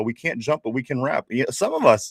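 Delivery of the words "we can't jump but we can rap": normal talking voice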